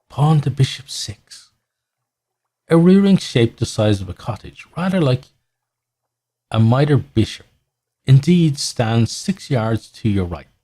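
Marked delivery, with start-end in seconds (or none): 0.2-1.5 soft whisper under the breath. As you reach the crossroad in Port Cecil, a voice whispers to you. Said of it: "a voice whispers".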